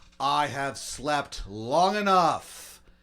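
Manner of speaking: unmodulated, very slow speech. Narrating a scene where a character wakes from a coma: saying it really loudly. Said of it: "you just say really loudly".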